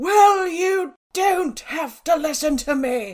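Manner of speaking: furious, very loud, high, slow roar. Recalling a teacher who caught her not listening, retelling the teacher's roar. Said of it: "And she roared".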